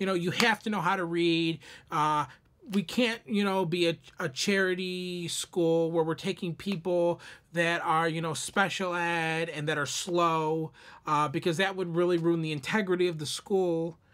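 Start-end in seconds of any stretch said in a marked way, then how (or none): none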